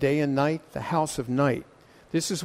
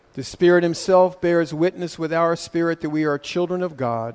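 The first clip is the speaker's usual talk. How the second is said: usual speaking voice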